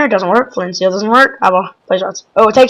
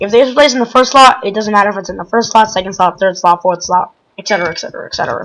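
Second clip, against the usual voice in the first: very fast, rattled-off, rapid-fire list. Narrating while building in a game, the speaker is speaking very fast. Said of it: "Speaking very fast, apparently".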